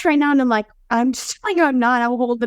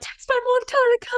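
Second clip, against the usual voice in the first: very high-pitched screaming; 11 semitones higher than usual. Recounting her labor, telling her husband to text her mom, retelling screaming at husband. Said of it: "I'm just screaming at my husband".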